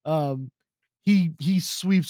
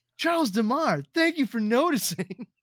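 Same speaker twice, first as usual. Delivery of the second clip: delighted, pitched-up, sincere tone with no irony; 8 semitones higher than usual. Retelling the same scene, thanking for being noticed: imitating Curtis Armstrong, so happy. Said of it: "Curtis Armstrong looks so fucking happy".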